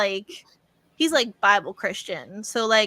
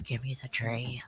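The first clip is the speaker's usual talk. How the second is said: very quiet, very deep demonic voice; 10 semitones lower, 12 dB quieter than usual. Retelling demanding the tree from someone: put-on demon voice. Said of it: "in my demon voice".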